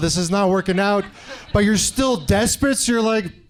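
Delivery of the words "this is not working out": plain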